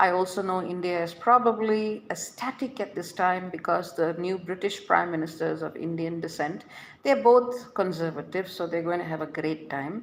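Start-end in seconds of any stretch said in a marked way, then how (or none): none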